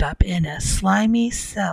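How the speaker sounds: plain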